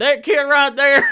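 loud, high put-on southern accent. Describing someone correcting other people's speech, saying it in a southern accent. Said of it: "I don't know why I'm doing a southern".

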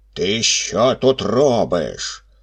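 calling out. Reading a tale aloud, the forest spirit sees the boy by the fire, shouted. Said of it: "та як гукне".

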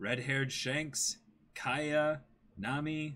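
ordinary delivery

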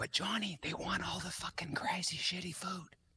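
whispered aside. The speaker turns to johnny in an aside, whispering. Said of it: "So that's why I'm whispering".

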